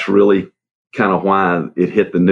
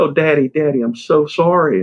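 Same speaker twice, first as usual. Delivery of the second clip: put-on crying voice, much slower; 10 semitones higher than usual. A father retells what his crying daughter said to him: imitating a crying daughter. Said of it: "And she's crying".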